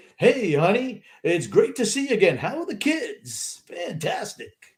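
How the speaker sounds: put-on broadcaster voice. Speaker imagines broadcasters greeting family at home in their announcer voice. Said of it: "Maybe that's their regular voice".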